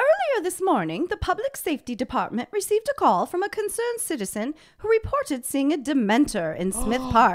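high, loud, animated, swooping sing-song put-on voice. Reading a posted news story aloud to the other speaker, in a Harry Potter voice. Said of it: "can I read this in my best Harry Potter voice?".

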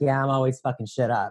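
plain

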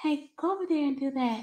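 soft, squeaky, mousy voice. Recalling their mom talking to them in the store, imitating her soft-spoken voice. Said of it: "That's literally how her voice was".

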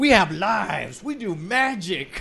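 slow, mock angry voice. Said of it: "leaning forward angrily and saying".

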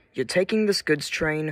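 usual speaking voice

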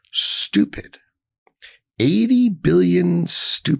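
slow, drawn-out, measured delivery with deliberate emphasis. Repeating 'stupid' about $80 billion of equipment: slow, deliberate. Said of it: "when I say it slowly like that".

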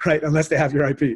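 said with a laugh. Speaker about to hand over to Nikki for questions, laughing.

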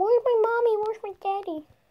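squeaky, very high little dog voice. Voicing the pet dog's thoughts while it sniffs around: voicing the dog. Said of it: "He's going".

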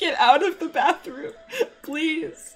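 slow, high, pleading on the verge of tears. Speaker voices a woman in the household, mock near-tears plea. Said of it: "She sounds like she's on the verge of tears".

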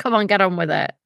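ordinary talk

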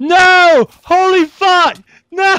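very high, very loud, drawn-out shrill scream. Gamer reacts to being knocked out of the round, screaming. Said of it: "What are you screaming at?".

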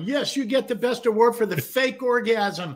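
high, tearful, blubbering, weepy sob-talk. Acting out an award winner crying on stage: imitating someone crying. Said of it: "they're all crying, going".

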